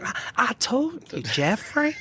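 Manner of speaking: very slow, drawled, high Southern twang. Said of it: "She get that southern twang".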